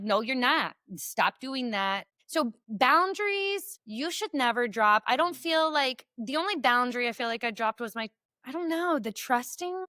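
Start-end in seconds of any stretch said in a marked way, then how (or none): 0.0-2.1 put-on fired-up, pumped-up voice. Retelling own past retort to ex-husband: imitating own fired-up retort. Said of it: "I was still pumped up".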